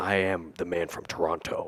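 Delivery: low voice, second T in Toronto fully pronounced. Act out the character who lives in Toronto, in a Woody Harrelson voice, enunciating Toronto's second T. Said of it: "They enunciated the T, the second T".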